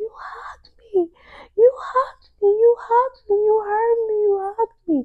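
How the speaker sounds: very high, loud, tearful sobbing cry. Telling listeners about feeling the Lord's hug in the bathroom, retelling own weeping. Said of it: "I just started weeping".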